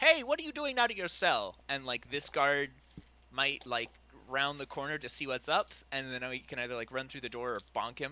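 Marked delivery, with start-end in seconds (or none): 0.0-1.5 put-on far-off calling voice, high and swooping. Player luring a guard by mimicking a guard's voice from off in the distance. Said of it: "mimic like a guard's voice from off in the distance".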